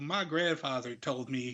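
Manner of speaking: put-on American southern accent. Recounting Dan Lambert's promo to a young crowd, Dan Lambert with southern accent. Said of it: "I don't know why I gave him a southern accent".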